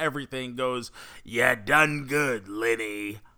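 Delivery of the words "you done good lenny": low voice with villain cadence. Retelling a Skeletor line from episode five: Joker voice. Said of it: "picture perfect Joker tone, cadence".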